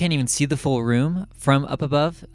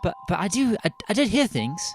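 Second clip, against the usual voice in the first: put-on high-pitched little girl voice; 7 semitones higher than usual. Playing a girl's portrait telling a visitor what it heard, small girl voice. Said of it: "It is a portrait of a small girl".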